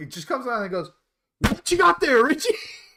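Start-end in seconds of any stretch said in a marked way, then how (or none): 1.4-2.5 shrill, sudden, very loud, high-pitched yell. Retelling someone coming up behind richie and calling out, a loud shout. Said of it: "Sound warning".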